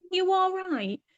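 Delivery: very hushed, very high little murmur. Retelling how a friend nudged and checked in during class: imitating Hannah speaking very quietly. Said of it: "Sort of very quietly".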